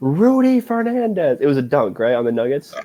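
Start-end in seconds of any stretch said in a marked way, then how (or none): 0.0-1.4 acted, very high, yelled play-by-play announcer call. Recalling an iconic call of a dunk on the Nuggets, imitating a yelled call. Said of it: "like yelling it".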